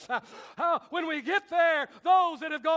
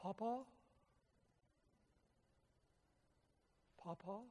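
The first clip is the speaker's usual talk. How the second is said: put-on very quiet, tiny, soft child's voice; 8 semitones lower, 20 dB quieter than usual. Imagining the voice of someone waiting for him in heaven, in a tiny little voice. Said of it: "listening for a tiny little voice".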